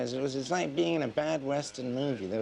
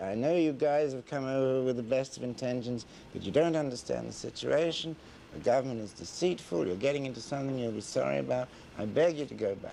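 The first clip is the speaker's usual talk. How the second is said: usual speaking voice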